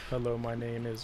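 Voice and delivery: very low, flat, dead-level monotone drone. Imitating how the quiet man would introduce himself: imitating a monotone voice. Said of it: "this is the most monotone dude".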